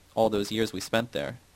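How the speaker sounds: ordinary delivery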